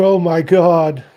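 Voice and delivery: mock high, loud, crying wail outburst. Imitating a voice heard on a recording: imitating a cry-like voice. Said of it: "It's almost like a cry".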